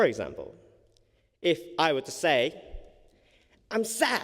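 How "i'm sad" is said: bright, happy, very high cheerful voice. Showing tone overriding words, saying a sad line in a cheerful tone. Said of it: "in this cheerful tone".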